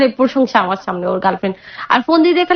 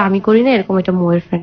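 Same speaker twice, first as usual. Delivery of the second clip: plain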